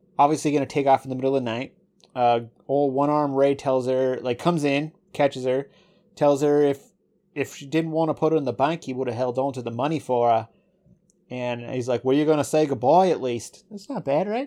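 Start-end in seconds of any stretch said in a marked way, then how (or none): 12.1-13.7 put-on Australian accent, laid on. Retelling a flashback scene, quoting one-armed Ray: Australian accent. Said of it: "My accent's getting all right, Australian".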